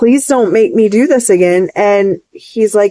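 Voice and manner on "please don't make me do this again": put-on pleading voice. Retelling own words to the Lord: imitating own pleading. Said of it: "pleading with the Lord".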